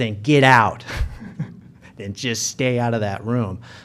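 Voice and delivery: gruff, rough-toned spoken voice. Retelling a warning to stay out of a room: imitating Brian Martin's gruff voice. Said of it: "Brian Martin's gruff voice says".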